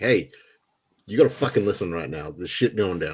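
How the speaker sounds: much sterner, hard, intimidating, threatening voice. Speaking in character to calm a running NPC: much sterner voice. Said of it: "I'm using a much sterner voice".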